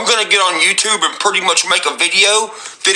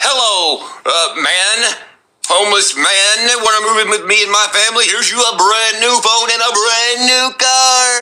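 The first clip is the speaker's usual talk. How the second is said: showy, upbeat game show host voice; 2 semitones higher than usual. Speaker mocks a woman's offer to a homeless man, in game show host voice. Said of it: "this sounds like a game show".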